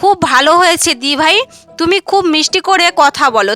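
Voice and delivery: ordinary talk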